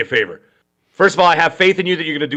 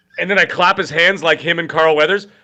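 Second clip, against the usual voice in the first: ordinary delivery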